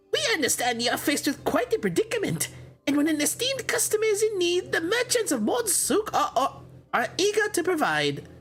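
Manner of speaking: put-on goblin voice, pitched way up. A game narrator voices goblin merchants offering help, in a goblin voice. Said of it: "Goblin voice".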